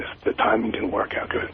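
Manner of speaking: soft, hushed half-whisper under the breath. A caller on the phone who can't talk up yet, half-whispering. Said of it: "I'm sorry I'm whispering".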